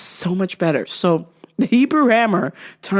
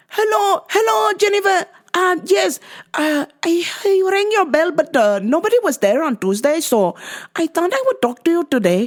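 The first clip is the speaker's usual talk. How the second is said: put-on Pakistani English accent, high-pitched and polite; 8 semitones higher than usual. Retelling what a neighbor said about her trash can: imitating a Pakistani neighbor's accent. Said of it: "So I gotta do voice".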